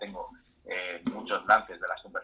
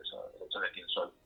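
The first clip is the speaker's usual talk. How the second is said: tiny, small, hushed little voice; 8 dB quieter than usual. Speaking about discovering who one really is: small quiet voice. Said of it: "con voz poquita, con voz bajita".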